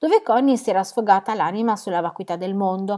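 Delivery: plain reading voice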